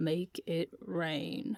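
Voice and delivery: put-on low old-man voice. Imitating exactly how a man said a line: low grandpa voice. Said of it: "I lower my voice and imitate exactly how he said it, like a grandpa".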